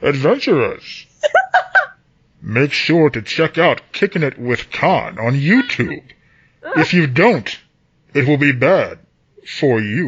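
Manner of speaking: muffled voice, talking through a cupped hand. Giving a YouTube channel shout-out for a listener who wrote in: muffled voice, mouth covered. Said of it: "I gotta cover up my mouth so I can".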